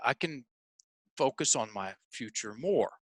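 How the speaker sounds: firm statement, stated as fact, no question lift. Retelling how he repeated his goal after being told to, said as a statement. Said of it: "Now say it like a statement".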